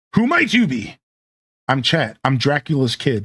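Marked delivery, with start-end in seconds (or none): 0.2-1.0 very high, swooping, sing-song posh voice. Voicing a character who introduces himself and his bar, fancy posh voice as Samuel. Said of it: "I keep wanting to give them fancy, posh, posh voices".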